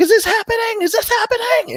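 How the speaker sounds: play-acted very high-pitched shrieking scream. Speaker recalls one episode of a beloved show, imitating screaming at the tv. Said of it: "you're just screaming at the T V like".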